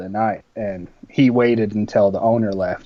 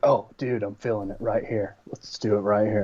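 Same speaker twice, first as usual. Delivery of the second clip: put-on surfer-dude voice, quieter; 6 dB quieter than usual. Describing a companion who records wherever they go, imitating Randy's surfer-dude voice. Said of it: "He's like he's like a surfer dude".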